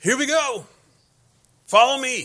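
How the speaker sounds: high, loud, rousing rallying yell. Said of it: "I watched this father yell".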